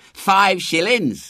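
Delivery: proud, boastful shout. One of the passing boys answers William's question: shouting proudly. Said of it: "shouted one of the boys proudly".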